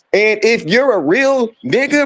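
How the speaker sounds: usual speaking voice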